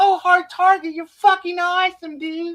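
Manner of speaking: put-on very high, level, loud, gushing fawning voice. Mocking how someone praised Hard Target: imitating fawning praise. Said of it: "was glazing the fuck out of him".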